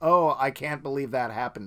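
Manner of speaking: mock, dripping with sarcasm, feigned disbelief. Retelling own reaction to a film spoiler: retelling own sarcastic remark. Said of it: "in a very sarcastic".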